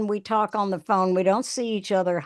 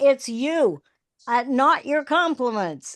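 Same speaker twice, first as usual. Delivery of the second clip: acted, emphatic, heated, pressing tone; 3 semitones higher than usual. Retelling words yelled during a long phone conversation: retelling own past yell. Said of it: "I yelled".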